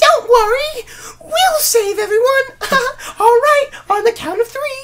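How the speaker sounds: bright, sunny, very high, loud cheerful voice. Mocking the DS version's voice acting for the characters, mock-cheerful smiling delivery. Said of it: "They say it with smiles on their faces".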